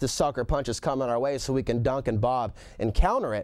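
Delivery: ordinary talk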